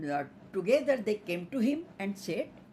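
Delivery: plain reading voice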